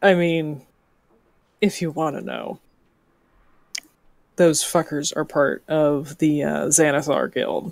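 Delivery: hushed, leaning in close. A character leans in across the table to tell anyone listening, in hushed tones. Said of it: "She's going to be speaking in more hushed tones".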